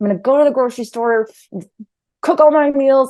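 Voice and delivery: loud, forceful, combative, fight-ready voice. Voicing someone fighting their body with strict plans, in a fighting voice. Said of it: "I'm I'm talking in a fighting voice".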